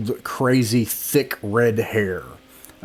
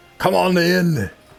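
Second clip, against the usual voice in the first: put-on Austrian accent, pitched up; 8 semitones higher than usual. Describing knocking on a door, a voice answers from inside in an Austrian accent. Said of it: "that was in an Austrian voice instead".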